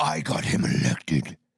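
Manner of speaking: put-on very low voice, withering, scathing scorn. Answer whether she said it by acting out her words, imitating a scathing voice. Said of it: "with a scathing voice".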